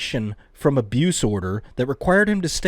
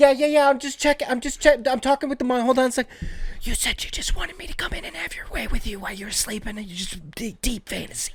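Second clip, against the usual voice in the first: hushed, heated, quarrelsome half-whisper; 9 semitones higher, 3 dB quieter than usual. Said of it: "They're whisper arguing while the kid's up".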